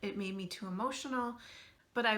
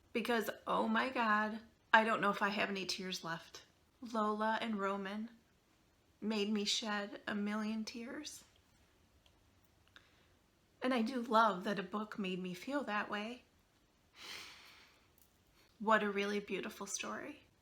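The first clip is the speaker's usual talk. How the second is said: emotional, tearful voice, close to tears. Wrapping up a video about a book that made her cry, emotional, near tears. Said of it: "I'm sure you can hear it in my voice".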